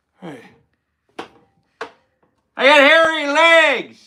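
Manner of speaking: sleepy, drawn-out drawl, very high and loud. Doing the impression another speaker asked for: Joe Biden impression. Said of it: "Do the Sleepy Joe impression".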